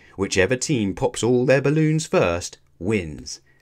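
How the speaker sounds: ordinary delivery, nothing marked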